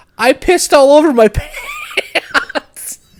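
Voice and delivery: put-on drunken-sounding, high, slow squeal through laughter.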